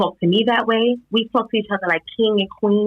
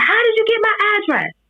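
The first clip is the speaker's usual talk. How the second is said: mock very high, shrill, furious screaming; 12 semitones higher than usual. Speaker retells what a woman screamed during a confrontation; retelling a woman's scream. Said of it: "So she's screaming at this point".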